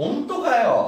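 very high, laid-back, incredulous tone. Explaining a japanese phrase's laid-back sense: casual incredulous tone. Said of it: "nesse sentido mais espojado, assim".

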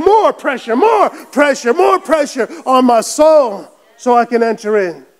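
loud shouted crying out. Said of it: "My spirit is crying out and saying".

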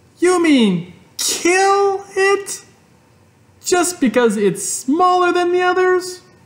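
very high, shrill, shrieking cry. Fern answers her mother at the breakfast table, shrieking. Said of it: "shrieked Fern".

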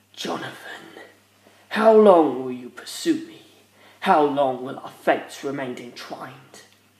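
low, dropped mutter, kept close. Dio speaks to Jonathan, who is still pursuing him: muttered. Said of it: "He muttered".

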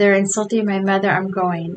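ordinary delivery

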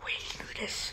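hushed, unvoiced whisper.

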